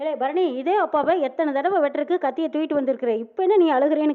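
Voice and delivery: ordinary talk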